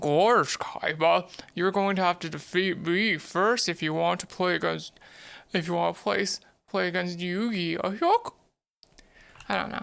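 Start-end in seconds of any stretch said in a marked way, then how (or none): 0.0-7.8 silly, goofy put-on cartoon voice. Voicing a duelist in a card-game roleplay, in a goofy voice. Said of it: "my goofy voice still isn't that good yet".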